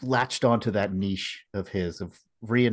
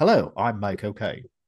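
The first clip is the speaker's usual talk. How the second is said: put-on Cockney accent. Giving a tip for impressions, the speaker says a line in a Michael Caine accent. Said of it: "if you want to say the name Michael Caine in his accent".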